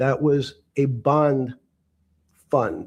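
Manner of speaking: very slow, drawn-out delivery. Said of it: "He had to say that very slowly so we could get it".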